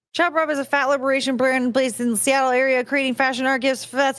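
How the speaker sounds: rushed, rapid, racing read-through. Reading a brand description aloud after a surprise: reading really fast. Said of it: "I'm trying to read this really fast".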